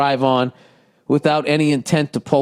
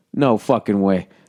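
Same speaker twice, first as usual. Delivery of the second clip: ordinary delivery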